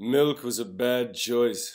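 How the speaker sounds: very loud, slow, drawn-out, high booming delivery. Answering a fan's request to do an impersonation: Ron Burgundy impression. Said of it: "do a killer impersonation of Ron Burgundy".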